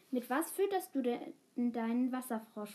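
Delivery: plain reading voice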